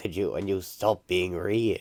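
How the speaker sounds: ordinary delivery, nothing marked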